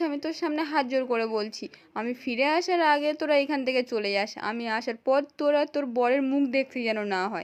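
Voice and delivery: ordinary talk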